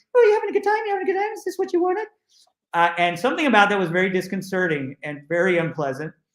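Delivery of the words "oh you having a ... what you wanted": very high, fast, squeaky chipmunk voice. Recounting what laughing, dancing figures kept asking them, in a high-pitched chipmunk-like voice. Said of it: "talking in this really high-pitched voice".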